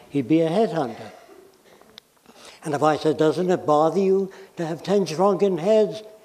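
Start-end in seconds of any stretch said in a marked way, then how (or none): none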